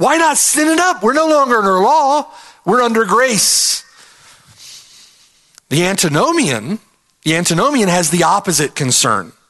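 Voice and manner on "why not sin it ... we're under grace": high-pitched, sarcastic delivery. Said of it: "Do you hear the sarcasm".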